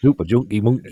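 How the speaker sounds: loud put-on Newcastle northern English accent. Trying out a voice for northerners: northern English accent. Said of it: "It's kind of Newcastle, I suppose".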